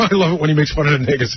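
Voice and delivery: ordinary delivery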